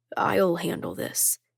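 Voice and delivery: low, rough voice. Sending the others home in a tense room, low, rough voice. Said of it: "Roman says in a low, rough voice".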